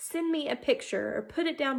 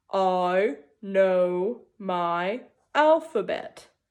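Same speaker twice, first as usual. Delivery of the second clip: big, deep, low put-on voice; 6 semitones lower, 4 dB louder than usual. Leading listeners in reading a sentence aloud, deep voice. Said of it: "Now let's read it in our deep voice".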